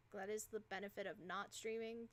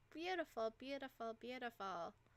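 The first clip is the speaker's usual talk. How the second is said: sarcastic-sounding, repeated delivery. Needing to sell items for a quest, the speaker reacts sarcastically. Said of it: "That sounded so sarcastic".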